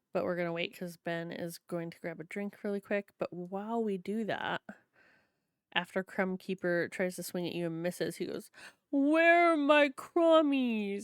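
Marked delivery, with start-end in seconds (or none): 8.9-11.1 high, slow, heartbroken, distraught cry. Narrator voices the character after his swing misses, as distraught Crumb Keeper. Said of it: "he's just so distraught".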